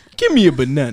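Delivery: booming, loud grim reaper voice. Back from a break, showing off an impression to the others: Grim impression. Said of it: "That's my impression".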